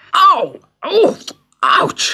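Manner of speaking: very high-pitched, pained yelps and cries. Gulliver, tied down, is hit by a shower of tiny arrows: crying out in pain. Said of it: "cried Gulliver as the arrows hit him".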